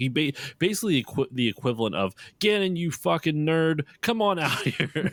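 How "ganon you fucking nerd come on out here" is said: taunting shout, high-pitched. Retelling how Link calls out Ganon outside his castle: imitating Link yelling.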